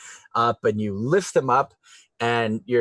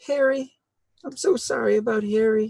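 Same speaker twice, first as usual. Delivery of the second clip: put-on very high, babyish baby voice; 11 semitones higher than usual. As the players try to get away, a voice calls after them, baby voice. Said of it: "you hear the baby voice say".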